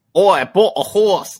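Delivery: put-on South African accent, very high, shrill and loud. After admitting they can't do it, trying an attempted South African accent. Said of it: "South African".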